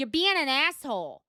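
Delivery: attempted New York way of talking. Telling someone off a second time, in a New York accent. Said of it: "let me tell you in the New York way".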